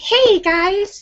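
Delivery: very high childlike cartoon kid voice. Imitating a viewer's voice described as childlike: imitating Linda's childlike cartoonish voice. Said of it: "childlike and almost cartoonish, like a little kid in a cartoon".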